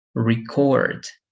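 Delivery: stress on second syllable cord in record. Showing 'record' used as a verb: stress on 'cord' in 'record'. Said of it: "if you stress the second syllable, it is going to be a verb".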